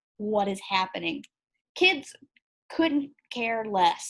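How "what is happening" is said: put-on mortified, shocked tone. Retelling how adults in the room reacted to the lesson: imitating mortified adults. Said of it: "the adults in the room were mortified".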